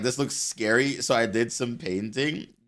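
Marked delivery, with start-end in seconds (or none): none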